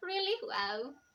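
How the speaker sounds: forced, put-on little giggle. Speaker shows listeners how to laugh softly instead of loudly, fake giggle. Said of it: "That was me trying to fake it".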